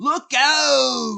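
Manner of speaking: very high-pitched, loud, nasal, roughened yell. Quoting the driver's line from the episode, high-pitched nasal voice. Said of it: "it turns into a high pitched nasally".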